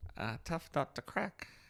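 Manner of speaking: breathy, half-whispered, breathed out. Mocking an actor's performance in a film: Johnny Depp impression. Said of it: "I'm gonna do a Johnny Depp impression".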